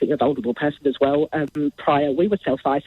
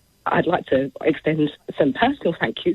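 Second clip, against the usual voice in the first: emotional, overcome, barely holding on. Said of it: "I don't know why I'm".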